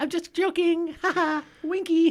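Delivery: very high, goofy, teasing, silly joking voice. Joking with another speaker, trying out a put-on persona voice. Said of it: "my new voice".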